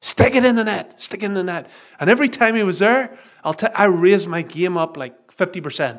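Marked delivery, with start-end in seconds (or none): 0.0-1.7 put-on loud yelling, shouted out. Recalling his dad shouting to him while he played, imitating a dad shouting. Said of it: "I would hear my dad shouting".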